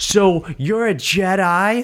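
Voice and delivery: mock stiff, forced line delivery. Criticizing an actor's performance, the speaker imitates his line, mimicking forced line delivery. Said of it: "so forced when he would talk like just".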